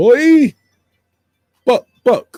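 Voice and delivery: loud, swooping, laid-on bad Jamaican accent. Showing the accent people laugh at, doing Dave Chappelle's Half Baked accent. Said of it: "I sound like Dave Chappelle doing um the accent from Half Baked".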